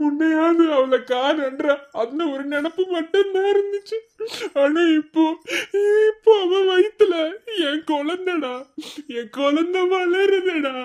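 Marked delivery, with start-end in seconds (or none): 0.0-8.5 sobbing. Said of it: "அழாத".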